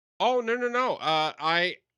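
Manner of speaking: high, loud, flustered and excited outburst.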